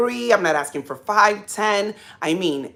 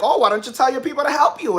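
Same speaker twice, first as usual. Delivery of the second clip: mocking, sarcastic tone, pitched up; 5 semitones higher than usual. Retelling what a sister said: imitating a sister's sarcasm. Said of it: "telling me with sarcasm".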